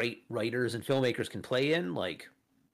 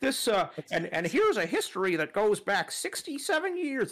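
very high filmmaker voice, rambling on; 10 semitones higher than usual. Imitating a filmmaker explaining his binders of lore: George Lucas voice. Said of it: "this is my George Lucas voice".

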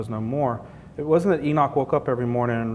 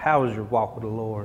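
put-on American Southern accent; 2 semitones lower than usual. Quoting a question the speaker often got asked: Southern accent. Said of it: "I always do it in the Southern accent".

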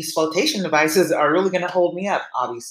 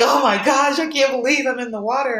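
put-on high, weepy, tearful crying disbelief; 8 semitones higher than usual. Retelling being in the water as the boat drifted away, acting out past crying. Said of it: "I'm like crying like".

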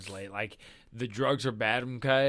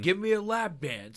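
put-on aggressive voice, higher; 8 semitones higher than usual. Retelling a movie scene at a strip club: imitating someone being aggressive. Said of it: "being real aggressive".

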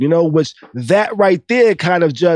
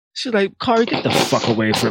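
usual speaking voice

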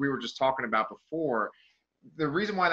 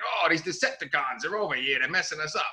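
put-on New York accent. Imitating Wheeljack, who sounds like he's from New York: Wheeljack New York accent. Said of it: "they both kind of sound like they're from New York".

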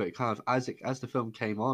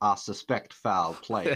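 unhurried, slow, drawn-out, deliberate delivery; 4 dB louder than usual. Quoting a favourite line from the film: Benoit Blanc voice. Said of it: "I was talking like that".

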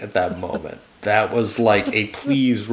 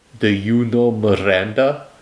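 dead flat, emotionless deadpan, no expression. Retelling a movie scene where a Soviet cop questions a stranger: stone-faced Arnold delivery. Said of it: "super stone-faced, Arnold, as Soviet cop".

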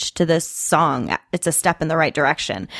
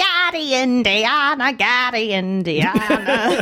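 slow, halting Irish accent, not quite landing; 4 semitones higher than usual. Showing how they had to say a line in an irish accent: irish accent attempt. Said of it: "So there's my Irish accent".

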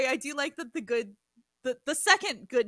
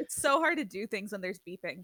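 normal talking voice

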